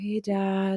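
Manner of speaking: soft, gentle, kind of nervous voice. Retelling calling a father while scared to call: retelling own gentle nervous greeting. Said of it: "really, like, gentle and kind of, like, nervous".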